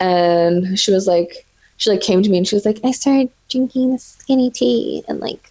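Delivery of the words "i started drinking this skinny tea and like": put-on higher, girly voice. A teenager retells what a girl said to them, imitating the girl's voice. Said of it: "I don't know why I'm making her voice like that".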